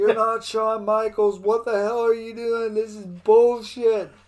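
furious, loud, angry screaming yell. Recounting a tv moment that irritated him, retelling screaming at the tv. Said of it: "I was screaming at the TV".

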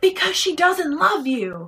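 high, upset, passionate screaming outburst. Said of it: "he just screams out".

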